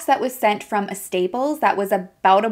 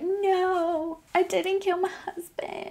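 high, crying, sobbing voice. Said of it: "she starts crying".

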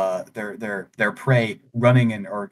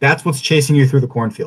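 ordinary delivery

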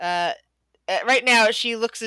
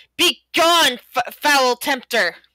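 put-on high, stretched-out, drawn-out yell; 5 semitones higher, 7 dB louder than usual. Voicing a character who points at a creature: yelling in character. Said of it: "her hand out and yells".

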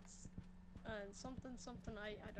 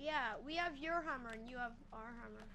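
normal talking voice

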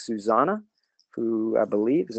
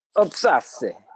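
put-on Italian accent, much higher pitch; 4 semitones higher than usual. Teaching Polish pronunciation, the speaker says a Polish word in an Italian accent. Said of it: "And the second word is Obcasy".

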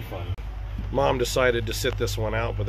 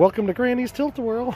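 put-on old-sounding announcer voice, higher pitch; 13 semitones higher, 4 dB louder than usual. Imitating a ride announcement that sounded old, in an old-sounding announcer voice. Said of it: "It just sounds old".

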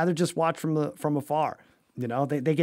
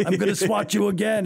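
pitched-up, muppet-style puppet monster voice; 5 semitones higher than usual. Retelling what the 7'2 player says back after a swat, Cookie Monster voice. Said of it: "in that Cookie Monster voice".

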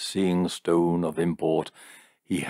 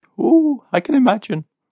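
very high, loud, teasing, mocking parrot voice; 8 dB louder than usual. Jim mimics his nearest and dearest after she leaves the room, in a high mocking imitation. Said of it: "he said in a high voice, emulating".

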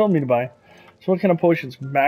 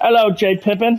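fake English accent, higher; 6 semitones higher, 5 dB louder than usual. Voicing a potion-shop greeting while playing a game: fake English accent. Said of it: "my English fake accent".

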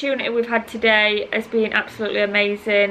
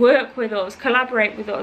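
normal talking voice

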